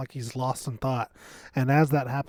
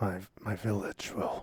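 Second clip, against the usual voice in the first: low mumble under the breath, barely out; 4 semitones lower, 8 dB quieter than usual. Voicing a character who mutters in a room: mumbling under breath. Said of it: "just kind of under my breath".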